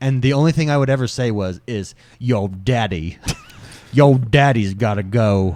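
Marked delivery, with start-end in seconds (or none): 2.2-5.6 exaggerated trashy Southern accent, lower. Joking about announcing a bathroom trip: trashiest southern accent. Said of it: "the trashiest Southern accent you could think of".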